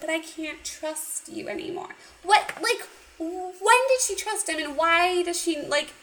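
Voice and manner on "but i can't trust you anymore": put-on sad voice, higher and quieter. Recapping a heart-to-heart scene, speaker voices the woman's reply, mock-sad. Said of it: "And she gets all sad".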